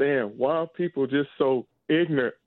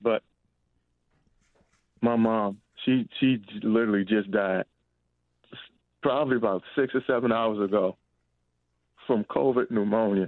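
voice fighting back emotion; 4 semitones lower than usual. A caller to a call-in show talking with the host, holding back emotion. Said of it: "I'm trying not to get emotional".

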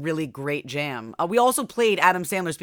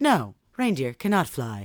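put-on smug voice-assistant voice, lower; 4 semitones lower than usual. Retelling a clip where a child asks about reindeer: imitating an obnoxious know-it-all Alexa voice. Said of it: "does it in her fucking obnoxious, know-it-all Alexa voice".

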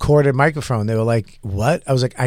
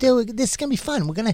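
put-on Boston accent, higher and quieter; 9 semitones higher, 5 dB quieter than usual. Retelling his own early hosting to the crowd: imitating own past Boston voice. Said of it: "It's my little Boston voice".

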